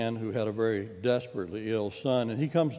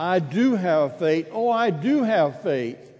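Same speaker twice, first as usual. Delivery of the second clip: mock heartfelt, earnest imploring tone, high and swooping; 7 semitones higher, 6 dB louder than usual. Retelling the man's answer to Jesus: imitating an earnest plea. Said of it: "very earnestly responds".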